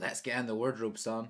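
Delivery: ordinary talk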